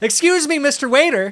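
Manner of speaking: mock very loud, high-pitched call, projected far. Describing how he summons a waiter, the speaker calls out very loudly. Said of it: "very loudly".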